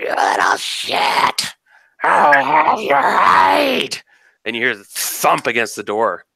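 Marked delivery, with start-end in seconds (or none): 0.0-4.0 very slow, high, rasping, horrific woman's screech. Voicing an unseen monster screeching down the hallway: horrific woman screeching. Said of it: "it sounds like this horrific woman".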